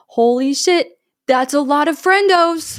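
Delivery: put-on stunned disbelief, loud and high. Retelling a line from the movie: Quinn's shocked line delivery. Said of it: "that's how she says it".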